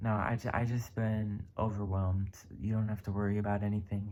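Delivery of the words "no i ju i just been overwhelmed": usual speaking voice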